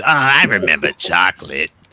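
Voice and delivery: parched, shrivelled, dried-up cartoon worm voice. Comparing the villain's voice to a cartoon worm: dried-up worm from SpongeBob voice. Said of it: "the dried up worm character on SpongeBob".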